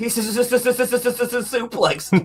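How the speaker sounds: very high, very slow, drawn-out put-on stammer on s. Picturing himself on wrestling commentary, joking: put-on stutter on commentary. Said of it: "Could you see me on commentary?".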